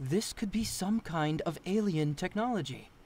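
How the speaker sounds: ordinary delivery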